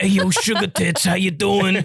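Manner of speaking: put-on voice of a middle-aged smoker. Retelling how a man greeted them, imitating a 48-year-old smoker's voice. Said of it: "he sounded like a 48-year-old Edna that's been smoking".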